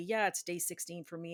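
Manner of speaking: plain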